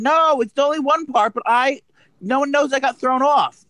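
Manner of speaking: full-on shrill, very high screaming. Telling another speaker about getting thrown off Chopped: screaming. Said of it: "Why are you screaming at me".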